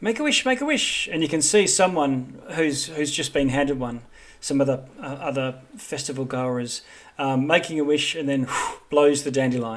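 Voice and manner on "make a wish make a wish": tiny, very high, squeaky squirrel voice. Narrating a festival scene, voicing a squirrel handing out dandelions: squeaky little squirrel voice. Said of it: "squeaks in its little squirrel voice".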